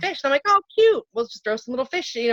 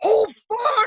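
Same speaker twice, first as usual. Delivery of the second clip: put-on, very high, frantic, panicked cry of alarm; 10 semitones higher than usual. Speaker retells yelling on a dock with her two kids, retelling a yell. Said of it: "I literally yelled".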